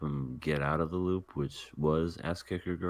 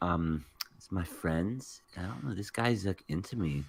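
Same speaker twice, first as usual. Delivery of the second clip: put-on California valley girl voice; 2 semitones higher than usual. Imagining how an anime character would sound dubbed: valley girl voice. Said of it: "like a valley girl".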